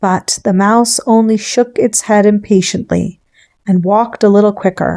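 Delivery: plain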